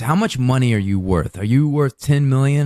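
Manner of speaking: ordinary talk, nothing marked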